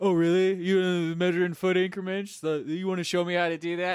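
acted patronizing, high, loud. Retelling how a coworker talks down at work, mocking Danny's condescending tone. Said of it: "he does this at work, too".

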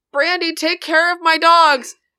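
loud, high-pitched yelling. Game narrator voicing DeeDee as she runs after a player, yelling. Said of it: "she goes after you and she yells".

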